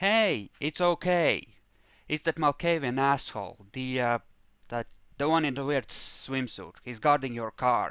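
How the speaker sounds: calling out loudly. Voicing a character who answers from up ahead: yelling back. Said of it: "kind of yells back".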